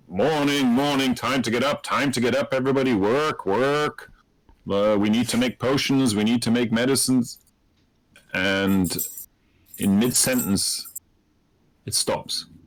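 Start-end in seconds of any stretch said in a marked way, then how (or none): 0.1-7.4 hearty, bustling, rushed delivery. Voicing someone calling everyone up down the hallway, in a hearty voice. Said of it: "hearty voice come down the hallway".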